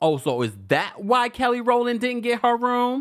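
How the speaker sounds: high-pitched, nosy, gossipy tone. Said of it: "because I'm more like".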